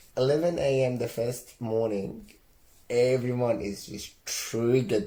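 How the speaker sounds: ordinary delivery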